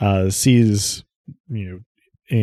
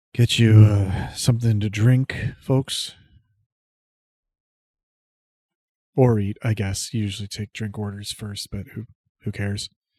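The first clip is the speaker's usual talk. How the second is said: worn-out, weary, draggled, dragging delivery. Voicing a bartender taking orders: draggled voice. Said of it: "a very sort of draggled voice".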